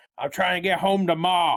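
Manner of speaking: put-on Southern accent. Playing a man asked where he's going, answering in a southern accent.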